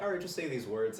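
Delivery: ordinary talk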